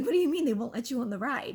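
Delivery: almost laughing. Retelling a friend's question about the refused ride: imitating someone almost laughing. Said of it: "almost starts laughing".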